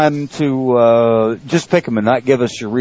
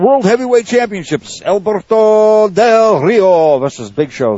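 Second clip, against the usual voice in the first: horrible fake Spanish accent, pitched up; 9 semitones higher, 3 dB louder than usual. Announcing the next match to listeners in the chat room, stupid fake accent. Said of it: "without the stupid, fake, horrible accent".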